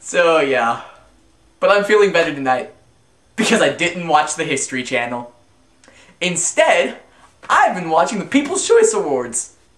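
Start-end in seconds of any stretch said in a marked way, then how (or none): 6.2-9.5 voice breaking, cracking on a word mid-line. Closing out an episode to listeners, voice cracking. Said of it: "My voice cracked".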